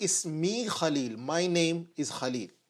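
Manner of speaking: plain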